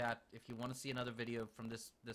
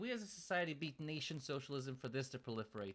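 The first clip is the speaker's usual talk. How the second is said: ordinary talk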